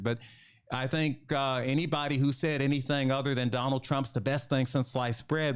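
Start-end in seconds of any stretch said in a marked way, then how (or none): none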